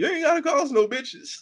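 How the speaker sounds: voice breaking up, cracking, very high. Retelling a quarrel on a show, imitating a cracking voice. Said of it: "that's when Bill voice cracked".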